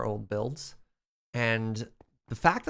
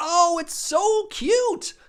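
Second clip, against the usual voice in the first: very high, very loud, shrill excited shout; 8 dB louder than usual. Reacting to the last building just being made red: shouting. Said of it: "Sorry, I'm shouting".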